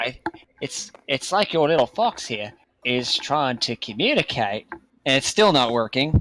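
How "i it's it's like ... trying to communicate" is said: put-on Australian accent slipping into the speech. Mid-conversation, slipping into a Steve Irwin-like Australian accent. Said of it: "I'm turning Australian again".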